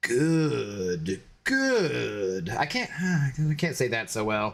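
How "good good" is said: low, deep villain voice, good drawn out, swooping. After restarting from a lag issue, Palpatine voice. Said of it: "in my Palpatine voice".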